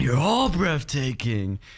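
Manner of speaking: put-on giddy, sing-song, bouncy childlike excitement. Retelling a game conference moment, imitating Keanu Reeves, giddy like a little kid. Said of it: "He's like a little kid who's coming out".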